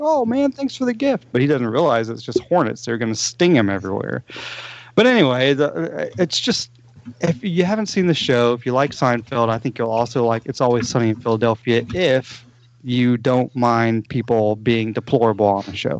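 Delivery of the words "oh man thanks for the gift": high, delighted delivery. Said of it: "And the guy's like".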